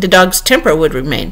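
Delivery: ordinary delivery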